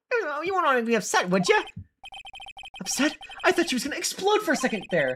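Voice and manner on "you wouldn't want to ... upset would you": laid-on, put-on Victorian accent. A character who uses this voice whenever she gets angry, Victorian accent. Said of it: "A Victorian accent for April whenever she gets angry".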